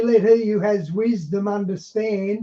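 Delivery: ordinary delivery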